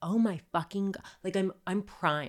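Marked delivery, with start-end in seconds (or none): 0.0-1.0 acted screaming, higher pitch. Retelling screaming on the phone when a man exposed himself on the street. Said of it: "I start screaming".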